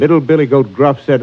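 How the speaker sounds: plain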